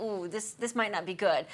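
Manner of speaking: normal talking voice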